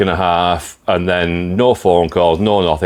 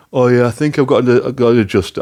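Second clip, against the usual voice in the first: high-pitched, silly, daft put-on voice; 5 semitones higher than usual. Retelling what the repair shop said on the phone: daft voice imitating a mechanic. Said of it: "I'm doing a daft voice for him".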